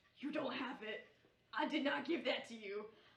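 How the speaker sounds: horribly fiendish yet sheepish, embarrassed voice. Describing a voice heard in your head while searching, in a mock fiendish, embarrassed voice. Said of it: "a very horribly fiendish and kind of embarrassed voice".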